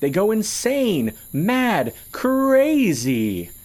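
very high, loud, swooping, shrill, drawn-out gleeful cry. Dancing, a character cuts in before a man finishes his warning, gleeful. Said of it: "Piker danced gleefully".

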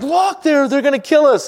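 acted, very high, loud, freaked-out panic. Retelling a servant seeing the army around Elisha; imitating a freaked-out servant. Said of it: "he looks up and he freaks out".

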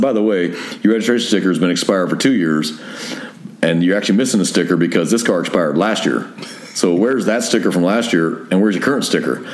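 ordinary delivery

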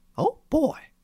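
very high put-on cartoon voice. Trying out a cartoon impression on request: Mickey Mouse voice. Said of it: "I think I could probably do a Mickey. Let me try here".

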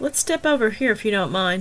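ordinary delivery

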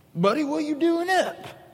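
country father voice.

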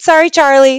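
breezy dismissive tone. Retelling a childhood friend's catchphrase reply, imitating a flippant apology. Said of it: "And it was so flippant".

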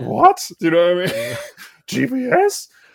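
mock astonishment, pitched very high. Mocking people who warn that phones have GPS, in a mock surprise voice. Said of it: "it's my mock surprise voice".

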